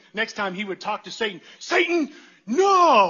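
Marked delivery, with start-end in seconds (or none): 1.5-3.1 shrill, very high, loud, swooping theatrical outburst. Retelling a young son's dramatic outburst at Satan: imitating Gabe, dramatic and animated. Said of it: "this very dramatic diatribe".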